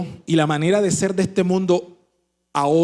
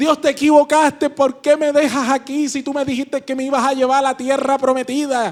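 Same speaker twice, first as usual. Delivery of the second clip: mock frustrated, fed-up, high, angry tone; 6 semitones higher than usual. Acting out how frustrated people speak to God, mock-angry and accusing. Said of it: "cuando están bravos y frustrados me hablan así".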